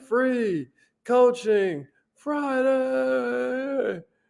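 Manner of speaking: very high, showy game show announcer voice. Welcoming listeners to Free Coaching Friday, in a Wheel of Fortune voice. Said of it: "Normally I say that in Wheel of Fortune voice".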